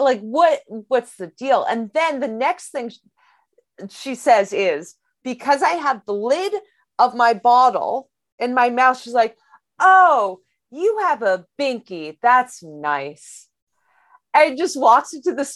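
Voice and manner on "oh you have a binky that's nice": put-on patronising tone, slow and condescending. Retelling what a woman said to the speaker, imitating a condescending tone. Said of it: "is she being kind of condescending?".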